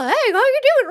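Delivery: tiny, very high-pitched gnome character voice. Showing the voice he gave a little gnome helper in his bar: little gnome voice. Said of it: "I pulled out this little".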